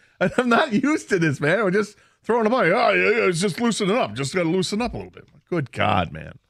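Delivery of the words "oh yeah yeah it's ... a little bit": put-on heavy, laid-on New York accent. Retelling what a roommate said while throwing hard: imitating a roommate with heavy new york accent. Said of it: "your imitation of him sounds a little bit like".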